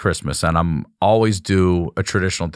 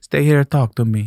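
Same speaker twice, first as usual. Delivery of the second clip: put-on Italian accent, older woman voice, pitched up; 7 semitones higher, 3 dB louder than usual. Retelling what an older deli lady asked: italian accent. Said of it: "she's got an Italian accent".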